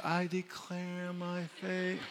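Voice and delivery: very slow, half-hearted, unconvincing, not serious delivery. Showing how not to say the declaration: half-hearted, not serious. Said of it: "if you say it like this".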